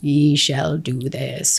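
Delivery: slow, theatrical, dramatized deep voice. Recalling the first time hearing an inner deeper voice speak, dramatized deeper inner voice. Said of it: "I'm trying to dramatize it now".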